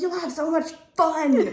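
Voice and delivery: very high, very loud, very enthusiastic gushing cheer. Retelling what mum said about the trip: imitating mum's enthusiastic voice. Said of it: "very enthusiastic".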